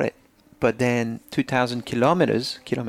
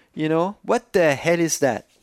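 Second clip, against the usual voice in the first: blurted, pitched-up outside voice; 5 semitones higher than usual. Complaining about a man taking business calls in the bathroom, loud outside voice. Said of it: "that was my outside voice".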